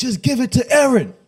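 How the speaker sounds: mock shrill holler, very high and stretched out. Retelling yelling at the tv during the game: imitating own yell at tv. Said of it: "I'm yelling at the T V".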